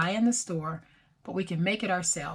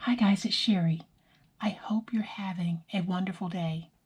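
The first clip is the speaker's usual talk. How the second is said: soft whispered voice. Host greeting viewers, whispering. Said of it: "Why am I whispering?".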